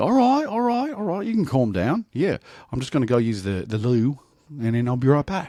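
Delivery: put-on Australian accent. Retelling a friend who keeps up a fake act: imitating an australian accent. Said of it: "he starts talking to her in the Australian accent".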